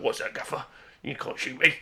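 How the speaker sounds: put-on orc voice, kept soft and hushed. Imagining the orcs answering the pilots in a model planes game: orc voice. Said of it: "And the orcs are like".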